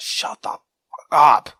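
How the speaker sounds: slow loud shout. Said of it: "I just wanted to shout".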